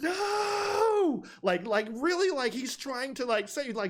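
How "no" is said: very high, stretched-out, drawn-out yell. Retelling a film scene where a character yells: imitating someone yelling. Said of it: "you can hear him yelling".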